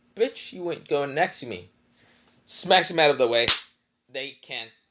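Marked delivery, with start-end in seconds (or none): none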